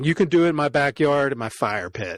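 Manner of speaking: ordinary talk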